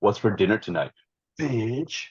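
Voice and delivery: heavy stress on bitch. Retelling what he said when told dinner was ready: heavy emphasis on bitch. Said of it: "With like a lot of emphasis on the last word. That's why I did the emphasis".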